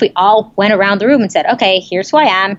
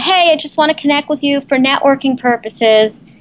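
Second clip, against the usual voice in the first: wishy-washy, vague, noncommittal, pitched up; 5 semitones higher than usual. Giving an example of a weak networking message, vague tone. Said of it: "I said it with that tone of voice".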